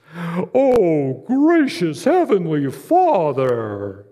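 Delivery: exaggerated, very slow, sing-song pious prayer voice. A speaker on prayer mimics how some people think praying must sound, exaggerated prayer voice. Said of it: "they've got to have this prayer voice".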